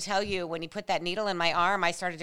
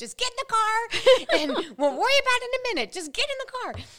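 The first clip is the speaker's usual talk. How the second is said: mock very high, shrill, loud screaming; 5 dB louder than usual. Retelling what a woman on the phone screamed at the speaker, retelling her screaming. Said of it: "she's screaming at me the whole time".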